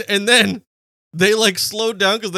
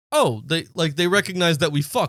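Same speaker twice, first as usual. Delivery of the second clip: ordinary delivery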